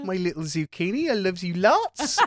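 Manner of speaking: high-pitched, put-on woman's voice. Doing the voice of Zakaya's mum after mentioning it. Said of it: "basically the exact voice of Zakaya's mum".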